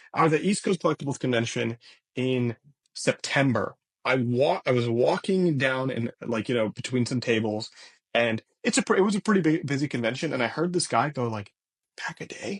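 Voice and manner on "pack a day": breathy, hushed whisper. Retelling a stranger at a convention saying the nickname: imitating a whisper. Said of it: "whisper it, as if he's whispering it".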